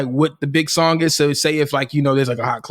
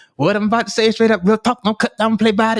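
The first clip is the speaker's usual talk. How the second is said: high, pitched up, lisping every s sound; 9 semitones higher than usual. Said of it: "we could hear the lisp".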